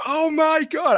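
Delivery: play-acted very high-pitched, excited scream of joy. Retelling watching the draft lottery flip, retelling a scream. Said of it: "I screamed".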